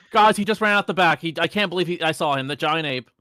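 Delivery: high, loud, frantic panicked screaming. Running to the front of the crowd in character, screaming. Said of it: "I'll run at the front screaming".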